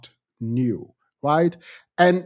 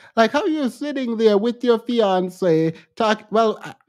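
higher-pitched, indignant, ranting voice. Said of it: "why am I talking like this".

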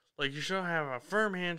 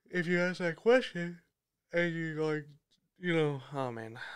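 yawning through the words. Speaker giving interview advice, yawning while talking. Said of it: "I'm yawning already".

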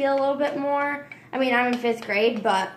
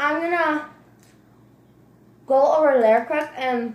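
talking with mouth full, higher; 3 semitones higher, 3 dB louder than usual. Talking to viewers while making treats, eating while talking. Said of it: "sorry, I'm eating pretzel".

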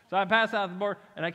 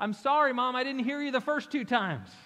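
high, put-on childlike yelling call; 5 semitones higher than usual. Retelling a daughter's reply to her mother: imitating daughter yelling. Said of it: "my daughter yells out".

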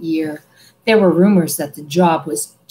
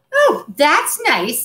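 put-out, huffy, pitched-up retort; 9 semitones higher than usual. Told by Ron to go away, Ginny answers huffily. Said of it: "said Ginny huffily".

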